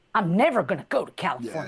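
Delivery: bad put-on twang accent. Quoting what a man told him, the speaker does a bad twang accent. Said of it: "I'm going to do a bad accent".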